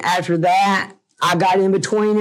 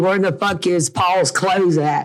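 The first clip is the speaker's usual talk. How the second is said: usual speaking voice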